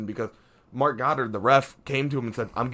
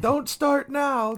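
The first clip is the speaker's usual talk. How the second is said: higher-pitched scream; 14 semitones higher than usual. Retelling what a coach yelled at a fighter: imitating a coach screaming. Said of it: "Covington's coach was screaming at Masvidal".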